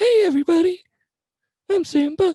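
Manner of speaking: very high, squeaky cartoon voice. Speaker recalls how his voice used to sound, in a Mickey Mouse voice. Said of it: "I used to have like a Mickey Mouse voice".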